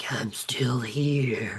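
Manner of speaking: low, hushed, drawn-out sinister villain voice. Describing a voice heard after a game's credits roll, evil villain voice. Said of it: "kind of like an evil voice that's like".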